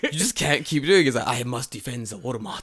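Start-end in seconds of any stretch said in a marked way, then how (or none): 1.3-2.6 formal, stiff, solemn samurai-style pronouncement. Acting out a Walmart guard told off by his manager: put-on formal warrior voice. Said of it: "stop talking like that".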